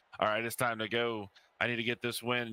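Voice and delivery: ordinary talk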